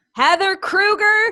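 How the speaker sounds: loud calling out, high-pitched and drawn out.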